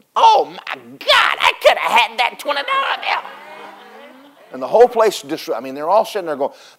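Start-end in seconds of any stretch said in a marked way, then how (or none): 0.2-3.3 mock, pitched way up, regretful, dismayed wail. Speaker retells young men who saw the money given away; retelling young men screaming. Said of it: "started screaming".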